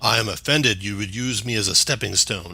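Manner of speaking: very, very deep, rumbling, grumbling voice. Game narrator voicing a rock-like creature the players leapt off; grumbling, very deep voice. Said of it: "you get a grumbling voice, very, very deep".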